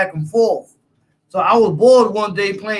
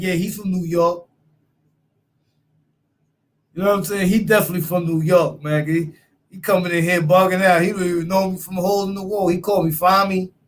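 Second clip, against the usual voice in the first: ordinary talk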